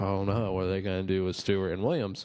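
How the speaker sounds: normal talking voice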